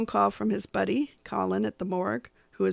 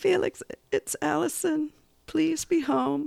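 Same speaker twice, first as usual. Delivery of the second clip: mock sad, pitiful, high pleading call; 7 semitones higher than usual. Allison calls from outside Felix's door: Allison's pitiful voice. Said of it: "you hear this pitiful voice outside the door".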